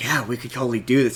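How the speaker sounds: put-on stage whisper. Recounting a scene, acting out a character's loud whisper. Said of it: "he whispers it really loudly".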